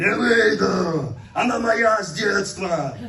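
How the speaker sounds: booming, very loud, slow, drawn-out masculine voice. Retelling ordering a devil out as it answers through a woman, possessed woman speaking in man's voice. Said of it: "говорит мужским голосом".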